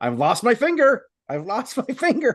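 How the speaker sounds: mock high, rising, crazed screaming. With his finger hanging off, he retells screaming at his wife: retelling a scream. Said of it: "I screamed right at her".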